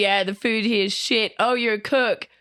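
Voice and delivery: mocking put-on voice. Mocking a film character's chat-up attempt: mocking imitation of a character. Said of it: "by being like".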